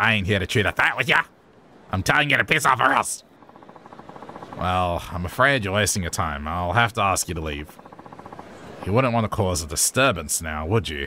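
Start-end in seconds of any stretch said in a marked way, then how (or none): 0.0-3.2 put-on broad Australian ocker accent, threatening tone. Voicing a game character telling someone to leave, in a bogan voice. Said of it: "I should probably calm down with the bogan voice".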